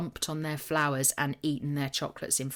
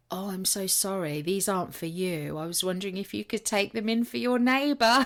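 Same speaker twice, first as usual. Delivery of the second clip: put-on uncomfortable, apologetic tone, pitched up; 5 semitones higher than usual. Retelling the florist's reply at the door: imitating an awkward apology. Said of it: "he looked at me really, really awkwardly".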